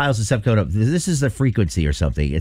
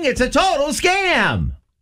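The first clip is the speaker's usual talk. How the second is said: loud, high-pitched announcing voice. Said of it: "say it loudly for people in the office".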